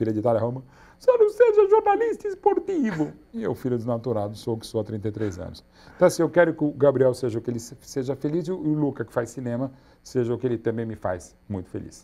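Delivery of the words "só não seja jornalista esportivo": very high, loud, tearful, crying voice. Retelling what the mother said about becoming a journalist: imitating mother talking while crying. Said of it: "Elas falam assim mesmo, chorando".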